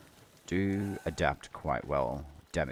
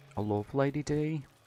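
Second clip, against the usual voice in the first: fake British accent, higher pitch; 11 semitones higher than usual. Reacting to a game character on screen: put-on British accent. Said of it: "Don't know why I'm going British".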